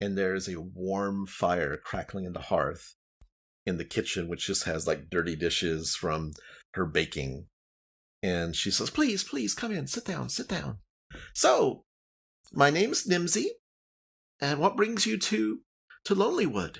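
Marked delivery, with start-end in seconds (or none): 8.9-16.8 halfling woman voice, much higher pitch. Game master voicing the halfling woman welcoming guests into her home: Nimsy Huddle voice. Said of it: "a halfling woman, kind of poking her little face out her porch. And she's like, is everything okay down there? No, he's trying to escape the sacrifice in [name]. He's a wanted man. Oh, 1 second. And s".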